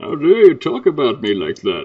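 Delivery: put-on villain voice. Teased about a lisp, the speaker retorts in a Bane voice. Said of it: "Bane's here".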